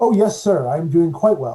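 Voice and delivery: loud, cheerful, chipper, upbeat robot voice. A badly damaged android answers when asked if it is okay, upbeat. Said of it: "I like your upbeat attitude".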